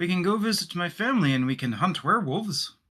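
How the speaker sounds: put-on clumsy German accent. Proposing the group's next move in character: attempted German accent. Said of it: "I can't do a German accent".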